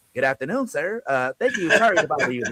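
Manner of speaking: mock formal put-on voice.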